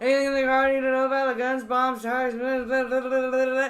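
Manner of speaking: rapid-fire auctioneer patter, very fast. Retelling a police officer asking about the car, imitating fast auctioneer-like talk. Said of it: "What are you, an auctioneer?".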